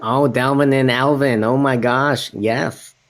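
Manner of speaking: very slow, dragged-out, rough, rude-sounding delivery. Imagining how a friend will react, not-so-good Mike Davern impression. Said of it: "not my best Mike Davern impression".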